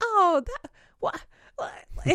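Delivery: very high, slow, halting stammer. Retelling how he reacted to being tagged, the speaker imitates him stammering. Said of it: "He like stammers".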